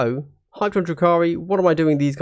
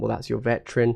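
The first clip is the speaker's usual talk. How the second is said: normal talking voice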